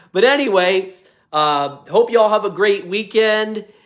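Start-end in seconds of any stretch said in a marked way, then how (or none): none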